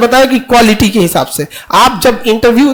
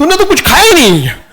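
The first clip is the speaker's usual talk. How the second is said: put-on speaking with a Punjabi accent; 6 semitones higher than usual. Acting out how army people talk to a soldier, in a Punjabi accent. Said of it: "ये तो पंजाबी टोन रहता है ना मुंह में".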